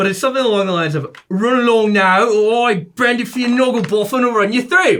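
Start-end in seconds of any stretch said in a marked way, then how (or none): 1.3-5.0 put-on high, slow, terrible British accent. Doing a quick character line in a high, bad EastEnders British accent. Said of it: "he's kind of high pitched ... like someone you would see on the show EastEnders ... I do a terrible British accent".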